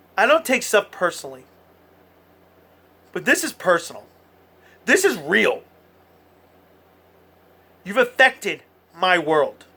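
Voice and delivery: upset, emotional, worked-up outburst. A broadcaster speaking on air to the audience, in an emotional outburst. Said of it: "I apologize for my emotional outburst".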